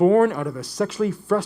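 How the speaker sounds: ordinary delivery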